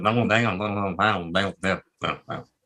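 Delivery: mumbling, cartoonish Texan accent. Asked whether they can do Boomhauer, giving it a try: Boomhauer impression. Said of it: "He goes".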